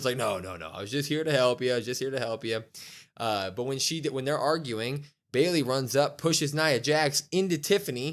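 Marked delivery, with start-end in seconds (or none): 0.2-2.6 acted defensive, pleading tone. Retelling a wrestling match, a wrestler caught out: imitating someone defensive. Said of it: "immediately is in defensive mode".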